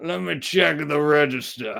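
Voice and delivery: put-on Southern accent. Describing a guy in suspenders, mock Southern accent. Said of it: "That's not even a New Orleans accent".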